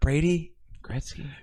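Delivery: quiet voice. Discussing a joke from an episode, quoting Dicky quietly. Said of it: "Gretzky was even quieter when Dicky said it".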